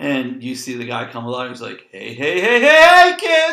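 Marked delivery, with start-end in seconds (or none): 1.9-3.5 belted out loudly, swooping and drawn out. Describing a guy who comes out before the starting lineup, in a Krusty the Clown cheer. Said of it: "Like Krusty the Clown comes alive".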